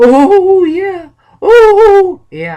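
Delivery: shrill, booming cry with a long, high, loud oh. Recalling Paul Bearer's return at WrestleMania twenty, in Paul Bearer voice. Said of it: "It's not the best impression of Paul Bearer".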